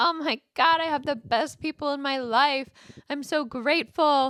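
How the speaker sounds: tearful, overwhelmed, grateful, speaking through crying. Retelling being alone in a hotel at night after a podcast: retelling own crying. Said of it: "literally crying and being like".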